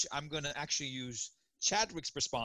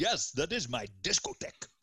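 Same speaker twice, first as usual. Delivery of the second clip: put-on, fake Eastern European accent; 4 dB louder than usual. Answering a co-host's joke about a phone call, fake Eastern European accent. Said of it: "I was trying to do like an Eastern European discotheque thing".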